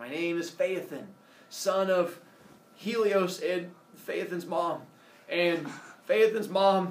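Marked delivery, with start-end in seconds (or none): none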